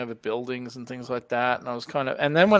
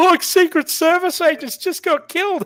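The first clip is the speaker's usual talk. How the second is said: put-on laughing blurt, very high and very loud; 8 dB louder than usual. Retelling what was said in a movie theater: imitating loud laughing speech. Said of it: "started laughing really loudly".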